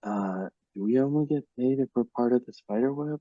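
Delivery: sneaky, hushed, half-whispered aside. Speaking in character to another character, asking quietly about pay: half-whispering. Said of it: "Damon whispers to Willow".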